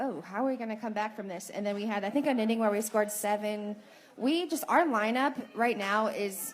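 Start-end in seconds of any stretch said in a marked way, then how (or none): none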